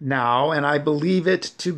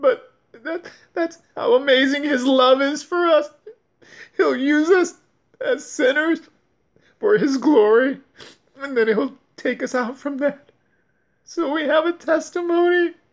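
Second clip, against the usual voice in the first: speaking through tears, crying; 10 semitones higher than usual. Thanking someone she never met for changing her life, crying while speaking. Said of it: "I'm crying".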